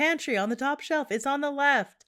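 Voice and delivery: high, loud, yelled-out voice. Retelling a conversation in the kitchen: retelling a yell. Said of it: "And I yell again".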